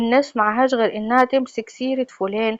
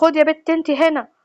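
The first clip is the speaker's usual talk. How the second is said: furious, angry, pitched-up tone; 5 semitones higher than usual. Retelling how a brother came in and called his sister: imitating an angry brother. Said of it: "دخل أخويا وهو متعصب".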